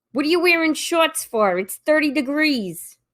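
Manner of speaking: put-on Boston accent. Podcast hosts acting out Bostonians, Boston accent. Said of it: "the Bostonian with like the Dunkin' cup going".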